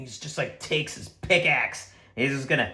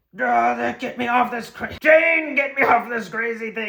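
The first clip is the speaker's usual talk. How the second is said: high, frantic, freaking-out panicked voice; 9 semitones higher than usual. Game master voicing Gorham fleeing a dragon, panicked, freaking out. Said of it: "So they start freaking out".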